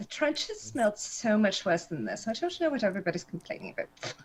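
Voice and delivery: low, soft, private mutter, half under breath. Playing Abigail in a smoke-filled hallway, muttering under her breath. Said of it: "Abigail's muttering under her breath".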